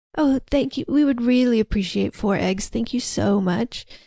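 put-on soft-spoken, whispery man's voice. Retelling the creepy character's thanks: imitating a soft-spoken whispery man. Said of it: "very soft-spoken".

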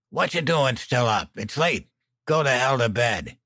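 put-on hoarse, croaky drunk voice. Narrator reads Dan telling someone still up late to go to bed, croaking. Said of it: "Dan croaked".

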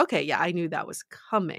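ordinary delivery

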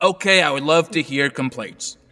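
ordinary talk

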